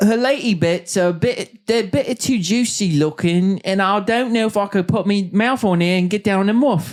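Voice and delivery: put-on British accent. Voicing someone deciding whom to select; put-on British accent. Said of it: "You got a pretty good British accent".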